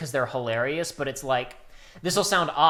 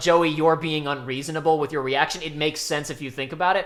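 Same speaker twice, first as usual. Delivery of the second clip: ordinary talk, nothing marked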